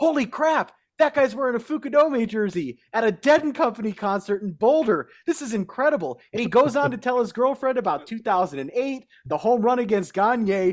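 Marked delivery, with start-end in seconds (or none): 0.0-6.2 play-acted, raised shout, calling out. Retelling a guy at a concert spotting the jersey: imitating someone shouting. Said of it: "shouts out".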